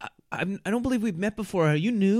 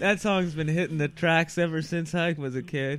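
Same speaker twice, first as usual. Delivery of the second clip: ordinary delivery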